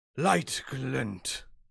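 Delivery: loud, rough, hulking goblin character voice. Narrating a game, speaker voices a goblin grown to a large size, large goblin voice. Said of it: "a large goblin. And uh, he looks down and says".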